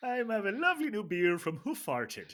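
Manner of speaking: put-on lilting, sing-song Irish brogue. Joking about the hoof hearted beer name, speaker tries it in an irish accent. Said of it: "I think it works better in an Irish accent".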